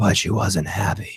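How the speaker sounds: low, slow, breathy, drawn-out half-whisper. Reading a monologue aloud, in the voice of Peter Baelish. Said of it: "I have to read it like Peter Baelish".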